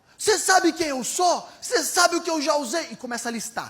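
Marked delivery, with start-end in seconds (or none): 0.2-2.9 mock annoyed, angry outburst, raised and high. Retelling how a man slammed the table and stood: imitating an irritated outburst. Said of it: "o cara começa a ficar irritado".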